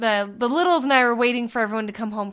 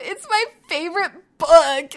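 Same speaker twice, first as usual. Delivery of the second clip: put-on high, slow, tearful child's voice. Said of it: "she just goes".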